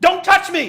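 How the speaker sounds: very loud, shrill, high-pitched shouting outburst. Retelling what a woman in the van said as the speaker sat by her, retelling a loud shout. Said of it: "in a loud voice".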